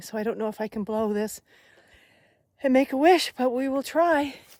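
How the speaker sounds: huffing and puffing. Walking uphill, the speaker tries to blow a dandelion, huffing and puffing. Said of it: "so I'm huffing and puffing".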